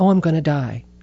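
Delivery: ordinary talk, nothing marked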